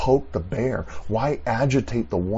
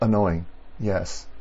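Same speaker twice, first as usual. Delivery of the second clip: ordinary delivery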